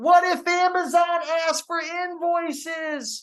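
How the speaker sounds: loud, very high, slow. Repeating a viewer's direct-message question to his audience, saying it louder. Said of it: "Let me say this a little louder".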